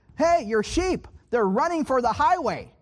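light, high-pitched shout. Retelling a warning to a shepherd about the sheep: retelling own shout. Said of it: "I'm shouting".

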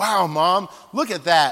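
loud, slow, blunt, tactless, outright delivery. Retelling her little brother speaking to their mom at Walmart, very loudly. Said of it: "he said something very loudly to my mom".

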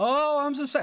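very high, put-on, whiny bellyaching voice. Acting out complaining about being tore up: mock bellyaching. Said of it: "I bellyache and say how tore up I am".

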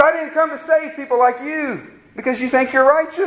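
high-pitched, sarcastic, jabbing tone.

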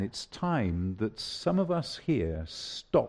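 as gentle as possible, low and soft. Addressing the people here, say the hard thing as gently as you can. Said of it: "I'm going to say this as gently as I can".

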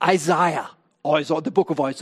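mock English accent, put on.

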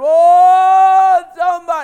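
put-on drawn-out wail, very high and loud. Acting out a possessed man in the tombs: imitating a man crying. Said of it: "that crazy man crying again".

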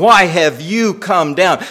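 mock sarcastic tone. Acting out an older brother's question to his younger brother: imitating a sarcastic tone. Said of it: "you get the sarcasm".

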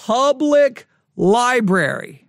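strong stress placed on the word public. Talking about a library carrying a book, strong stress on public. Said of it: "I've got to stress that word".

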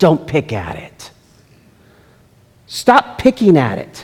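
slow, drawn-out, called-out voice. Imagining Jesus crying out from heaven about picking at scars: voice of my mother. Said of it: "crying out in the voice of my mother".

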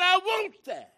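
almost screaming. Retelling a boy's answer in a doctor's office: imitating someone almost screaming. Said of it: "he was almost screaming like I'm screaming".

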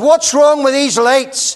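shouting loudly, high pitch. Telling a story, the speaker acts out his dad shouting through the house, retelling dad's shout. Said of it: "he shouted right round the house".

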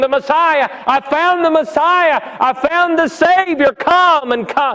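mock high, imploring, crying pleading tone. Telling how a newly saved woman returned to her city, retelling crying and pleading. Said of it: "crying and pleading".

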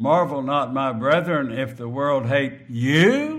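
heavy stress on "you", hit hard. Rereading the scripture verse aloud, stress on you. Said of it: "The emphasis is on the word you".

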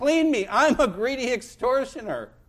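high, loud, desperate crying out.

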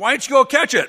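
very high, very loud, shrill yell. Retelling the prank call punchline: imitating a yell into the phone. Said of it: "You yell on the phone".

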